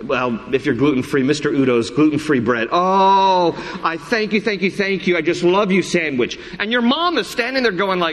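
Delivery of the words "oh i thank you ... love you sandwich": put-on adoring gushing, higher. Imagining thanking a sandwich instead of the mom: imitating gushing over a sandwich. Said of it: "you're like".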